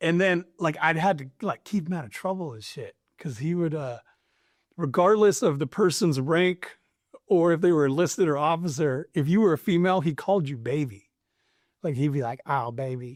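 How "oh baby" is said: speaking with a twang. Imitating a commander who called women baby: imitating a twang. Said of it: "he had this, like, twang about him".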